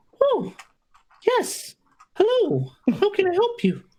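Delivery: squeaky, very high gnome voice with bouncing pitch. Narrator voicing the gnomish woman greeting the visitors, in [name]'s gnome voice. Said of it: "because I have one gnome voice".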